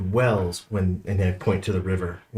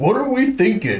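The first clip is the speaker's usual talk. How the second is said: exaggerated inner voice, very high and loud; 13 semitones higher, 5 dB louder than usual. Showing another player how a voice in their head might sound: strongly characterized voice. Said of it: "just like a really characterized voice just appears in your head".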